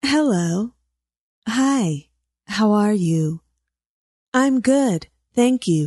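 really smooth, smiling voice. Showing how to make your voice sound; smiling, really smooth voice. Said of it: "lots of smile in it and sound really smooth".

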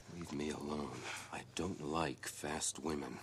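forceful, very low, very quiet hushed growl. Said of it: "he kinda growls at her, and then he says".

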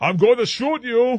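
high, loud put-on Danish accent. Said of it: "In my Danish accent".

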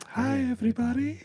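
sharply rising high pitch. Quoting The Simpsons cartoon doctor's greeting: Doctor Nick voice. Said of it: "Doctor Nick".

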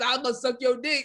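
put-on, low, dropped deep alien voice. Imitating an alien that comes at someone: deep alien voice. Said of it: "deep voice ass".

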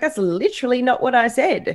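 high-pitched indignant tone.

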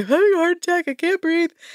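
very high, breathless, gasping, hyperventilating panic. Retelling how a suspect panicked with police: imitating a hyperventilating panic attack. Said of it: "has a full-blown hyperventilating panic attack".

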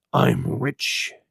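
hushed whisper. Reading a story aloud, a castaway confiding a secret: whispering. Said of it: "lowering his voice to a whisper".

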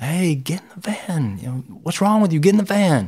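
put-on urgent shout. Retelling shouting at a running friend to get in the van: imitating shouting at someone. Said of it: "we're shouting at him".

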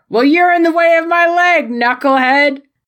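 high, bickering, shouting yell. Retelling a match where two wrestlers yell at each other: imitating wrestlers yelling. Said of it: "they just yell at each other".

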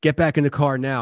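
put-on angry, harsh tone. Retelling a friend's order to get back in the car: imitating an angry order. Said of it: "his whole demeanor changed and he got real angry".

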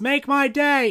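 high loud yelling. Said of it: "somebody in the audience yells".

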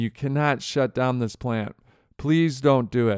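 put-on, mock pleading tone. Recounting what factory managers told a CEO on the phone, acting out pleading. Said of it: "pleading, and in some cases crying".

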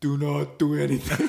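generic monster voice. Joking about Hulk carefully subduing a villain, the speaker does a Hulk voice. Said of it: "I don't know what that voice was then".

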